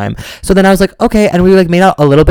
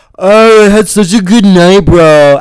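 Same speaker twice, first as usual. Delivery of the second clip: play-acted loud, slow, pitched-up, dragged-out drunken drawl; 5 semitones higher, 6 dB louder than usual. Retelling what a drunk roommate said on walking in: imitating a drunk person. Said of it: "was so drunk, and he was like".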